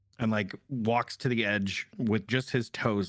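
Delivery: ordinary talk, nothing marked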